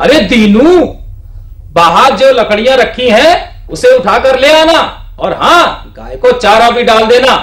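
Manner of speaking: energetic, high-pitched voice. Demonstrating a dialogue line spoken aloud, full energy delivery. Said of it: "अब इसको हम पूरी ऊर्जा के साथ बोलेंगे".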